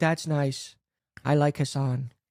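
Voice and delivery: female character voice. Quoting a mom's text message aloud: female Donald Trump voice. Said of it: "your mom sound like female Donald Trump in this".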